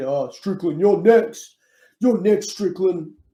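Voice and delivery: put-on high, blended Chinese, New Zealand, Nigerian, Australian accent. Quoting what the fighter Izzy said, in Izzy's mixed accent. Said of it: "In that Chinese, Kiwi, Nigerian, American, Australian accent that he does".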